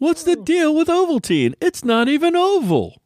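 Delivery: high, sing-song, swinging delivery. Doing impressions together with others, a Jerry Seinfeld impression. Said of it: "our impression of Jerry Seinfeld".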